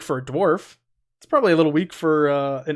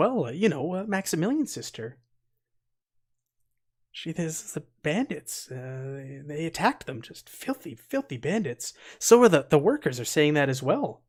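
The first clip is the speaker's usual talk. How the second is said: hushed, muttered under the breath; 4 dB quieter than usual. Voicing a woman character, saying it hushed under her breath. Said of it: "saying this like hushed under her breath".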